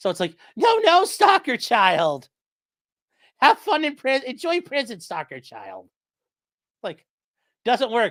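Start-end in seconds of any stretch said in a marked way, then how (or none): 0.6-5.9 light, higher-pitched, toothless-sounding taunting voice blunting words. Imitating Patrick's line to stalker child: higher-pitched Patrick voice. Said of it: "he's got this higher-pitched voice".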